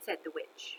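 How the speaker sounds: ordinary delivery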